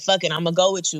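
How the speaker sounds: ordinary talk, nothing marked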